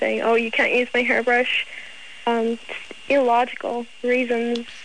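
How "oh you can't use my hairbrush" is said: usual speaking voice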